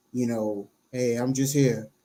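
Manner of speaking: imitated flat drone. Mocking how young people talk: mocking a flat monotone. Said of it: "They all talk with the same monotone".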